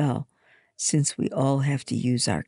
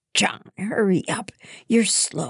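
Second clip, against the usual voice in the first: angry stage whisper, pitched up; 6 semitones higher than usual. Reading a story: at the dinner table, Hannah whispers to John, angrily. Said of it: "She angrily whispers".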